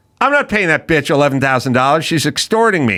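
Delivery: plain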